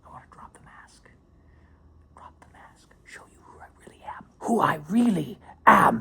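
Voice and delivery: theatrical whisper.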